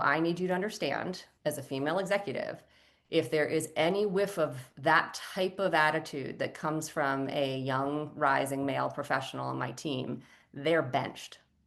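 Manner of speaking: usual speaking voice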